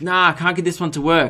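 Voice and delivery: ordinary delivery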